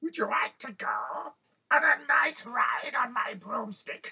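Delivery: very high-pitched cackling witch voice. Telling a story, the speaker voices the witch speaking to the children, cackling witch voice. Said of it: "she cackled".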